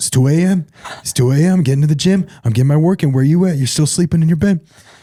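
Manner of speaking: high mocking bragging voice. Retelling a comedian's bit making fun of Mark Wahlberg: mocking Mark Wahlberg impression. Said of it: "making fun of Mark Wahlberg".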